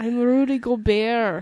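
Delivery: put-on French accent. Playing Rudy Gobert in an improv scene: Rudy Gobert impression, French accent. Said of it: "That was the best, uh, French accent I could do".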